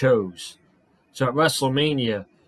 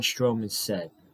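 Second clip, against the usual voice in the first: usual speaking voice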